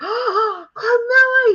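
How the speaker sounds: very high-pitched, really loud yelled shout. Retelling an old friend spotting her at a convention: imitating someone yelling a name. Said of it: "he yells real loud".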